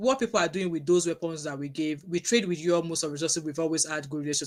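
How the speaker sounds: ordinary delivery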